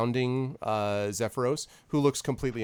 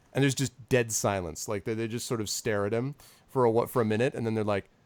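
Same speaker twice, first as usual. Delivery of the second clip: ordinary talk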